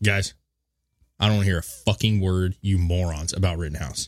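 ordinary talk

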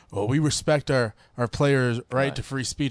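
ordinary talk

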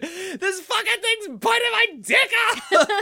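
shrieking, very high-pitched, loud scream. Act out a movie character being bitten while he tries to yank it off, imitating a man screaming. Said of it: "he's screaming".

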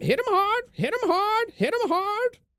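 very high-pitched, repeated, screeching monster cry. Game master voices a tentacled creature circling the captain: screaming creature.

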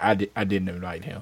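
low, soft deadpan delivery.

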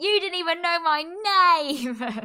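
put-on all-out, high-pitched screaming outburst. Talking about her blaming and delusion, retelling Lawrence screaming at her. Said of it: "Lawrence screaming at her like".

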